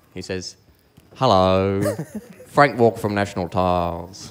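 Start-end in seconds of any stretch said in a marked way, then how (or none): 1.2-4.3 put-on TV commercial announcer voice. Reading out a donation message in impersonation: Frank Walker impersonation. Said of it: "I'll try my best with this impersonation".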